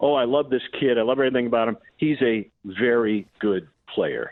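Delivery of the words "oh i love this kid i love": ordinary delivery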